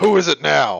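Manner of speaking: loud gruff call. The game master voices someone inside answering a knock on the door, in a gruff voice. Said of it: "and you hear a gruff".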